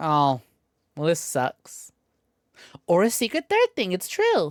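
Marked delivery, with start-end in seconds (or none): 0.0-1.9 slow, deflated, let-down, disappointed tone. Repeating another speaker's reaction to a design: mocking a disappointed tone. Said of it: "you sound so disappointed".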